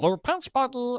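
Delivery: high cartoon character voice. Talking about Stitch as a great character, the speaker does the Stitch voice. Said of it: "the voice is easy to do".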